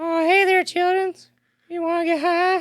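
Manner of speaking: very high-pitched, very loud cartoon voice. A speaker shows off one of the favorite voices they can do: Towelie voice. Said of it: "one of my favorites that I can do is uh, Towley from South Park".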